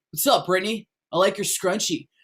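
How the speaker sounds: put-on careless, indifferent teenage boy voice. Speaker demonstrating character voices, doing a careless teenage boy voice. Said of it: "like I'm like a teenage boy and I don't really care".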